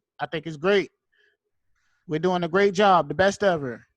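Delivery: loud, vague, bragging voice. Acting out Trump answering a question: Trump impression. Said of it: "he's talk like that".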